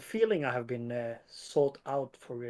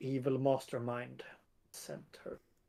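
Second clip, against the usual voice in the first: muttering quietly under the breath, quieter; 8 dB quieter than usual. Voicing a character suspicious of a follower: muttering under his breath. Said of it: "under his breath says".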